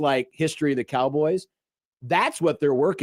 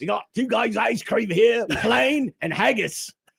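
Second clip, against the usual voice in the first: put-on British football hooligan voice; 7 semitones higher than usual. Serving up ice cream while doing voices, in a British soccer hooligan accent. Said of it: "Now we're going soccer hooligan British".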